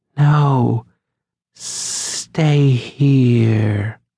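sharp, forced-out hiss. A woman who has grabbed the narrator's leg: hissed. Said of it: "she hissed".

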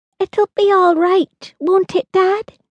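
very high, anxious, worried voice. Holly asks her dad about the whale on the shore, anxious. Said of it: "Holly asked anxiously".

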